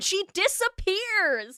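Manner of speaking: screaming, upset. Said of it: "It's just me screaming into my microphone".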